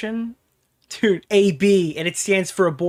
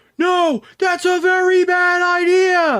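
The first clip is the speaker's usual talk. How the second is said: put-on very high, very slow, drawn-out wailing scream; 12 semitones higher, 5 dB louder than usual. Retelling a Jurassic Park III scene with the Spinosaurus: imitating a screaming character. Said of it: "He's screaming right now".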